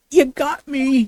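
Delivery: loud, high, yelled outburst. A witness in court, questioned about false statements, finally cracks, shouting. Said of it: "The witness will lower his voice".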